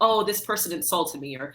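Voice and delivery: ordinary delivery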